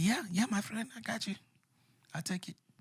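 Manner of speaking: very high, eager call-centre phone agent voice. Retelling what people on a phone call sounded like: imitating a call-center worker's accent. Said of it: "That's what he sounded like?".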